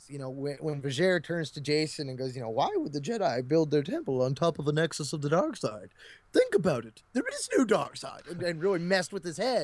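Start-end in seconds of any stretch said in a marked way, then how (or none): 2.5-8.2 swooping, animated game character voice, wide pitch swings. Retelling how Vajer turns to Jason, the speaker does a Vajer impression. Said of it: "Is that your Vajer impression?".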